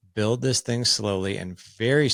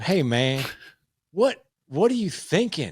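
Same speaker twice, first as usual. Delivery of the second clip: put-on Nashville accent, pitched up, rising tone; 8 semitones higher than usual. Retelling what a coach from Nashville said on the phone: imitating a Nashville accent. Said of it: "he's from Nashville".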